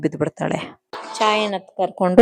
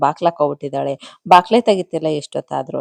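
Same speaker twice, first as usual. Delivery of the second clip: ordinary delivery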